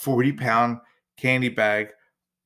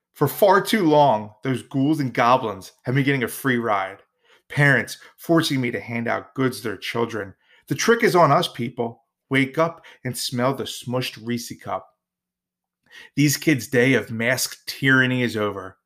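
normal talking voice

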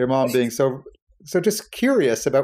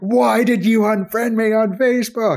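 loud yelling voice. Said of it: "she yelled at me saying".

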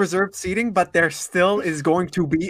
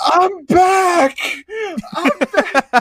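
high, loud scream. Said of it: "I'm screaming".

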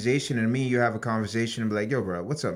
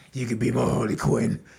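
rough, raspy, creaky masked-hero voice. Doing his Batman voice while chatting about Batman: Batman voice. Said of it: "Let me do my Batman voice".

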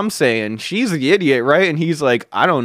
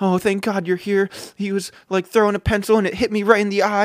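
fake wronged-victim tone, pitched up; 6 semitones higher, 3 dB quieter than usual. Retelling how a woman acted once the principal arrived, mocking a woman playing victim. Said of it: "playing the victim".

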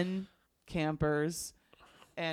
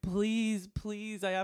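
acted, pleading begging tone; 4 semitones higher than usual. Retelling a camp memory, acting out her own begging. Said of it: "And I remember begging".

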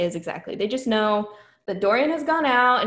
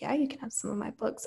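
put-on sultry seductive voice, much quieter; 11 dB quieter than usual. Speaker recaps a book scene, voicing the man's reply to her note in a put-on phone sex voice. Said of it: "my phone sex voice came out".

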